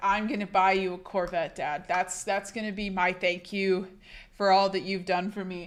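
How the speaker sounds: plain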